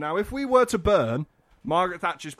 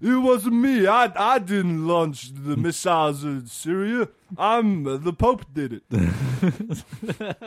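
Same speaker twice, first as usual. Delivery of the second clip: very slow, drawn-out action-star voice; 3 semitones higher, 4 dB louder than usual. Repeating the denial about launching missiles: Sylvester Stallone voice. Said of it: "in almost Sylvester Stallone's voice".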